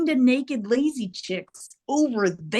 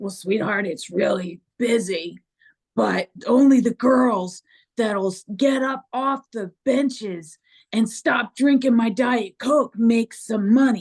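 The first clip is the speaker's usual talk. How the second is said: raspy, rasping seventy-something man's voice. Retelling asking a man how busy his club is, doing his raspy seventy-something voice. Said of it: "he sounds like raspy voice, seventies something".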